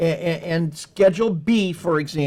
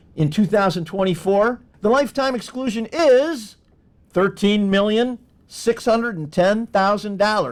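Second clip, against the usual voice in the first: TV showcase announcer delivery; 4 semitones higher than usual. Stating the lifetime gift tax exclusion figure, like an announcer. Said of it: "I did that like an, an announcer".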